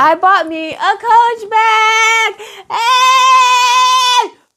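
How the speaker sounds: very high, very slow, thrilled, excited voice. Showing off a new bag bought for oneself: excited exclamation. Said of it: "Sorry, I got too excited".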